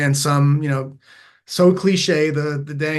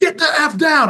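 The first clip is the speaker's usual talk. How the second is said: play-acted, very high, stern, top-of-the-voice yelling; 12 semitones higher, 5 dB louder than usual. Retelling ordering a daughter to get down: retelling a yell at top of voice. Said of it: "at the top of my voice yelling at her".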